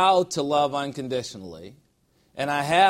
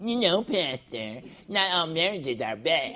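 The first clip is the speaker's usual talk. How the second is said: mumbled, mocking, parodying delivery; 2 semitones higher, 4 dB quieter than usual. Pastor retelling a phone call, mocking Monica's voice to himself. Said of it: "mumbling her words to myself in that mocking voice".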